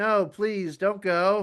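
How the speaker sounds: very slow, drawn-out chocolatier voice. Mocking a careless Superman by imitating him: Willy Wonka voice. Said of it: "he's like Willy Wonka".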